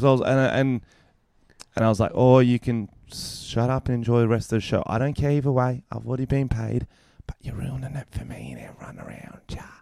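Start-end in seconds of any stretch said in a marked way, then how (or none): 2.1-9.6 mock condescending, patronizing, annoyed talking-down tone. Retelling what was said to a rude audience member: retelling a patronizing tone. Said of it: "That sounds very patronizing".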